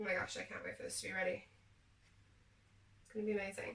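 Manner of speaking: very quiet, hushed, flat, dry deadpan monotone. Sprinkling Oreo shards over a dessert, speaking in a dry tone. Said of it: "I said that with a really dry tone".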